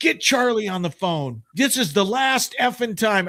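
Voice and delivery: put-on angry rant. Retelling an outtake where the announcer goes off on the crew: Casey Kasem going off angrily. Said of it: "He says".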